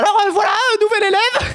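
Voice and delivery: very high, faltering, halting voice full of "euh". Retelling being presented to the class as the new student, imitating how the woman talked. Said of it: "Je vous jure qu'elle parlait comme ça".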